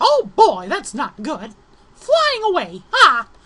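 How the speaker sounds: squeaked out high and loud. Describing a scene where an exploding cake sends him flying, Mickey Mouse voice. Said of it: "Mickey Mouse impression, sorry".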